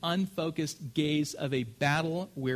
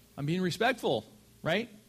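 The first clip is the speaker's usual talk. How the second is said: ordinary delivery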